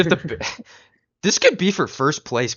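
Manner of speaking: adolescent voice cracking up high. Talking about the Bears and Eagles game with a friend, voice cracking. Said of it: "my voice cracked like fucking adolescent".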